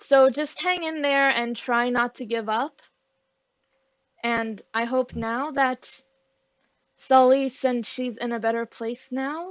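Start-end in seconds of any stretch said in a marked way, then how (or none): 4.2-9.5 starting to cry, words catching, choked-up and tearful. Speaking about someone now in a better place: starting to cry. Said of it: "I'm starting to cry again".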